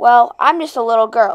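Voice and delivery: ordinary talk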